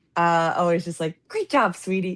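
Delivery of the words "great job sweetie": supportive, encouraging, cheering, praising tone. Recalling how mom always praised, imitating supportive mom. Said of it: "That's a good impression".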